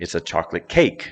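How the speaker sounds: cake stressed hard, chocolate left flat. Reading example phrases to show where stress goes, stress on cake. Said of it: "the adjective is no longer emphasized".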